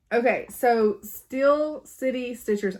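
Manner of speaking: slow, careful, deliberate pronunciation. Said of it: "I have to say that slow".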